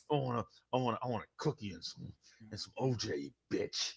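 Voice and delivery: very deep, hushed, very low and soft superhero voice. Imitating a man ordering lunch on campus: Batman voice. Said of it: "it was Batman ordering lunch".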